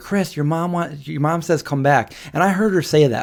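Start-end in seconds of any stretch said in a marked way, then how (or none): 0.0-2.1 mock girl's yell, higher and slower. Retelling a story, the speaker imitates a girl yelling at him. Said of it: "she's yelling at me".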